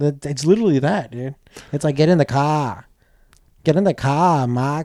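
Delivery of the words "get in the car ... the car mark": terrible, fake, put-on Boston accent. Mocking a woman's accent, the speaker shows how it sounds: bad Boston accent. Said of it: "it's like me trying to do a Boston accent".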